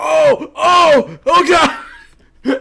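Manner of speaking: very high, very slow, drawn-out cry of pain. Voicing a character who bends for an axe and cramps: pained cry from a stomach cramp. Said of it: "you get, like, a cramp right in your side".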